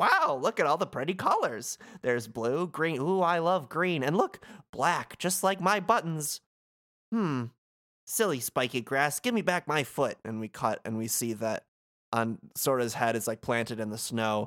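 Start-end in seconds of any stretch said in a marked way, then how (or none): 0.0-10.2 high, cheerful, sunny snowman voice. Retelling a scene where Sora wakes in the snow, the speaker does Olaf's voice. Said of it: "we hear a snowman voice".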